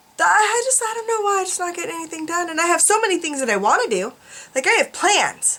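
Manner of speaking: whining in a high voice. Complaining about getting nothing done despite many plans: whiny tone. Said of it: "I sound really whiny today".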